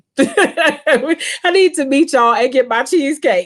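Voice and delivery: high-pitched delivery while laughing.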